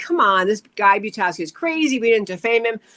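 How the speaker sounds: normal talking voice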